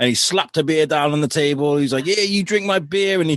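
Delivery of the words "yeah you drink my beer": very loud, friendly, high man's voice. Retelling a beer slapped down on the table: imitating Bill, loud and friendly. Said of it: "He's a very loud, very friendly guy".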